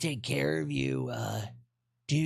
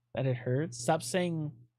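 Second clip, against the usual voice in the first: ordinary delivery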